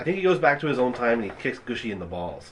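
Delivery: plain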